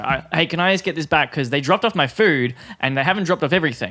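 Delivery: put-on heated, loud tone. Retelling a customer demanding a table number back: imitating an angry, heated tone. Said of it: "it's just that tone".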